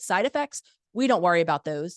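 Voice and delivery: play-acted condescending, dismissive tone. Retelling what a doctor said when asked about side effects: imitating a condescending tone. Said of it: "in the most condescending tone I've ever heard".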